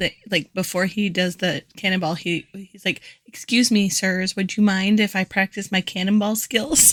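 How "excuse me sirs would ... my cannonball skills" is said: mannerly, proper, very polite and courteous. Retelling a polite request before a cannonball: polite Kevin imitation. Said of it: "I loved how polite Kevin was".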